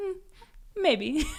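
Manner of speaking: put-on with a Haitian accent. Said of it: "I should do the accent".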